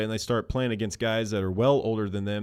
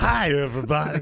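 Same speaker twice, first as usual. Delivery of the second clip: put-on broadcaster voice, higher and louder; 6 semitones higher, 5 dB louder than usual. Showing how an interview opening sounds: Harry Carey impersonation. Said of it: "that's my impersonation of Harry".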